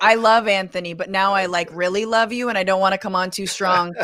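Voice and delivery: ordinary talk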